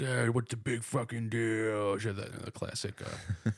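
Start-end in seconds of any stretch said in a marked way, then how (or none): 0.0-2.0 put-on deep, slurred, drunken pirate-like baritone. Retelling what a homeless woman shouted in the street: imitating a drunken slur. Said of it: "classic, uh, drunken slur, almost like a pirate".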